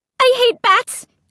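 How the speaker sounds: very high, stuttering, stammering, scared. Narrator reading a line spoken in the dark among bats, stammering. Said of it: "I stammered".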